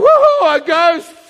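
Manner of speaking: put-on frightened whoop, high, loud and terrified. Retelling the walking-on-water story, acting out the onlookers' cry, mock-terrified. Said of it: "They're terrified".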